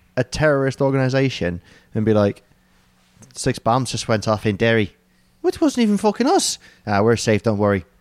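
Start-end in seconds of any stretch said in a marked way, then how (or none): 3.4-7.8 put-on horrendously overdone Irish accent, swooping sing-song. Imitating the IRA reacting to the news: bad Irish accent. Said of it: "my horrendously racist Irish accent".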